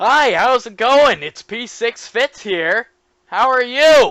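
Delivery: full-on yelling, very loud and high-pitched. Testing how much the microphone distorts, shouting a greeting. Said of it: "I'm shouting".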